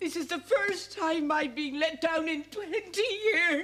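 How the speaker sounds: high, tearful speech while crying. A woman let down when a promised guest never came to open the flower festival, crying while talking. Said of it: "Mrs. Field, you're crying".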